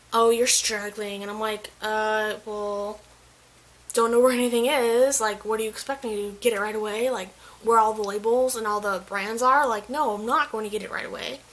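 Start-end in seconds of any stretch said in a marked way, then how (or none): 0.1-1.2 slow, condescending tone. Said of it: "condescendingly was like".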